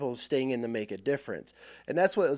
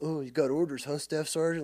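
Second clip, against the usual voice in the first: mock smug, self-satisfied, knowing tone. Retelling what a sergeant major said on seeing orders: imitating a smug sergeant major. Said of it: "all smug and shit".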